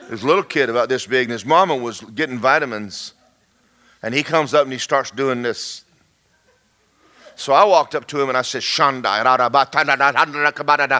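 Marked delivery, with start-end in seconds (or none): 8.6-11.0 babbled, prayer-like stream of nonsense syllables. Retelling praying over a little kid in a store: retelling praying in tongues. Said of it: "I'm just praying in tongues over him".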